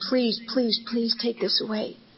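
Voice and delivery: desperate pleading, close to tears. Recounting praying to God after a meeting, retelling a tearful plea. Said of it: "I'm absolutely in tears with terror and fear".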